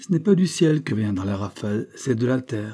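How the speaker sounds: ordinary delivery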